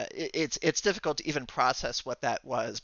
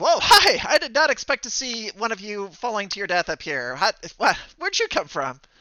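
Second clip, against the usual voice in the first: cute, bubbly, perky, pitched-up, faintly male voice; 8 semitones higher, 8 dB louder than usual. Voicing a character who speaks from right behind the listener; perky, cute, excitable voice. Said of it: "perky, somewhat uh, cute, and a little uh, uh, excitable".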